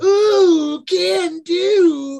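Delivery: very high, loud cartoon chirp, "do" stretched out. Imagining a Rick and Morty scene where a summoned creature answers: Mister Meeseeks voice. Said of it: "call out a Mister Meeseeks".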